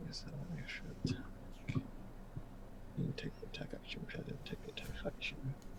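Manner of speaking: soft unvoiced whisper under the breath.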